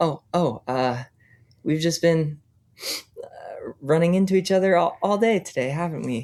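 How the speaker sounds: teary, halting voice. Narrator voices a character who recognizes the listener's character, crying a little. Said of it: "crying a little bit".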